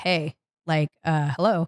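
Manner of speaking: plain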